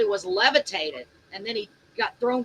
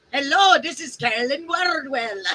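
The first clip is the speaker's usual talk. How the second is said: put-on cereal mascot accent, little cartoon dude voice; 4 semitones higher than usual. Asked to try it, the speaker introduces someone in a cereal-mascot accent. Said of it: "that's my other um accent ... It's the little dude in the in the in the cereal".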